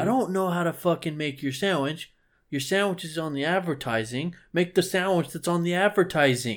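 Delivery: put-on Northeastern US accent. Ranting about being asked what to put on a sandwich, Northeastern US accent. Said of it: "That was very Northeastern of you. Your accent there".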